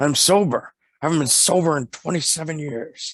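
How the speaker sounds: put-on mumbled, hard-to-understand voice. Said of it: "and he's like".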